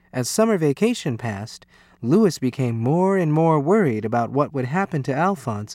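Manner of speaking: ordinary delivery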